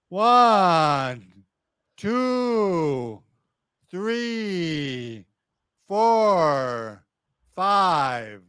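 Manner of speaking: stretched, lingering, drawn-out delivery. Repeating the count after being told to elongate it, elongated and drawn out. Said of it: "I want you to elongate it".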